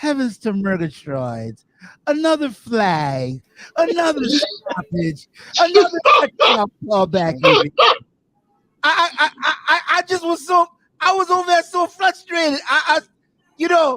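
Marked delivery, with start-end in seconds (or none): 0.0-5.3 cartoon lion voice with "flag" stretched out. Complaining about a referee stopping a player, in a Snagglepuss voice. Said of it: "I gotta say it like my old man Snagglepuss".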